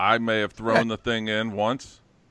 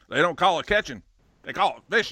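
put-on Kentucky accent, pitched higher; 6 semitones higher than usual. Retelling a fishing trip, quoting the man he fished with, Kentucky accent. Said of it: "he said in his Kentucky accent".

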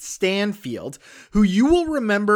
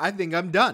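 ordinary talk, nothing marked

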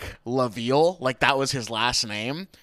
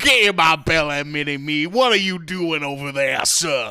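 put-on Cajun accent, louder, slower; 2 semitones higher, 4 dB louder than usual. Speaker pitching a new take on a character: Fat Bastard as a Cajun dandy. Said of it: "Fat Bastard has to be like a Cajun dandy".

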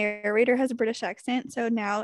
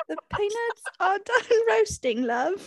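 very high-pitched put-on British accent; 10 semitones higher than usual. After a nervous first try, repeating the line in a british accent. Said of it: "Why aren't they hiring you to be in British movies".

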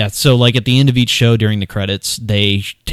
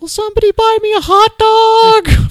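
put-on slow, very high girlish voice, "dog" stretched; 4 dB louder than usual. Retelling a sketch line at a hot dog stand: high-pitched girl voice. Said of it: "doing the high-pitched girl voice the whole time".

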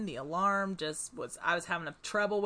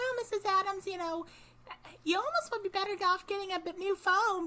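put-on cute, little, much higher voice; 11 semitones higher than usual. Speaker quoting a man who called her mrs. adams, cute little high voice. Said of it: "He had this super cute little high voice".

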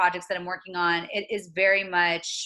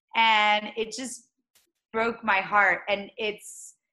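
plain

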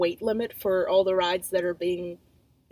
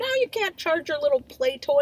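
mock, pitched-up, overbearing yell; 8 semitones higher than usual. Retelling how strangers at an airport yelled at a woman, in a put-on yell. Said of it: "like yelling at her like".

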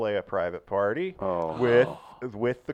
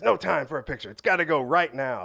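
put-on scream, higher; 5 semitones higher than usual. Retelling how a guy screamed that there was no time for a picture: imitating someone screaming. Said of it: "he's screaming at us".

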